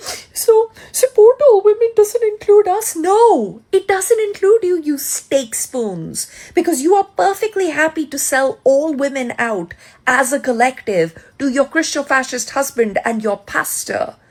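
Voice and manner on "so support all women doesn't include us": loud, high-pitched, wailing crybaby whine. Mocking how conservative women complain: imitating someone crying and complaining. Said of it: "crying and going".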